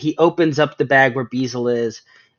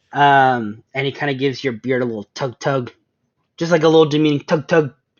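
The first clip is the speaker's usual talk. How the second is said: plain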